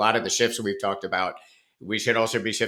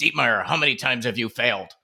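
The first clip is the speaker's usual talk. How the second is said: put-on gravelly old man voice. Retelling what Leo asked him, imitating Leo. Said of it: "in his in his Leo voice".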